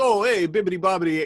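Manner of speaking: put-on Italian chef accent. Describing an italian chef on a talk show: imitating italian chef accent.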